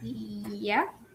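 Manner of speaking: soft, unsure, scared-sounding mumble, unconvincing.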